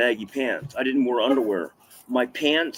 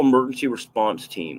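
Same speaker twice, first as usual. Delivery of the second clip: ordinary talk, nothing marked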